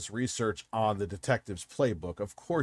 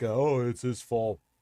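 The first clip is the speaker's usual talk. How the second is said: silly, dopey, mocking put-on dumb voice; 2 semitones higher, 3 dB louder than usual. Mocking the suspect's excuse by copying it: mocking dumb voice. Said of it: "Why do you do the dumb voice".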